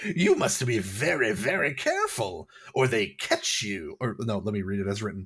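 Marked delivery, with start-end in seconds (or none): 0.0-4.0 high-pitched, squeaky, giggling, cackling voice. Voicing a tiny hunched figure stepping out from behind a boulder: high-pitched giggling voice. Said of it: "High-pitched laughter rings out".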